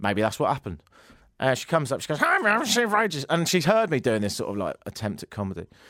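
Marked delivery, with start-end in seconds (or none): 2.2-3.2 high, pitched-up, annoying cartoon voice. Retelling what a woman said when she came up to him, in a Marge Simpson-esque voice. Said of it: "It's a bit Marge Simpson-esque".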